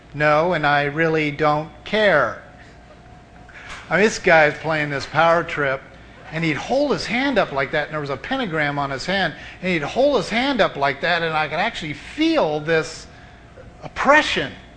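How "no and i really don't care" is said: slow, heavily sarcastic, acted-out tone. Answering a man who asked if they knew who he was, retelling own sarcastic reply. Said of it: "And I very sarcastically said".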